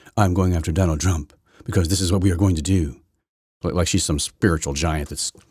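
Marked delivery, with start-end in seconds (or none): 0.2-3.0 put-on low, grandiose voice. Mocking a prosecutor going after Donald Trump: imitating Letitia Jackson talking really low. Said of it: "she talks really low like this".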